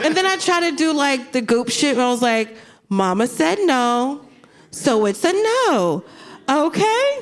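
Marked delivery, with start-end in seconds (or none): 2.9-7.2 very slow, drawn-out, deliberately nice tone. Retelling telling her no, in a put-on nice tone. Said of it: "I was saying in a nice tone".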